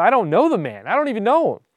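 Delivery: high-pitched, loud, emphatic, insistent voice. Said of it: "he denied it with an oath".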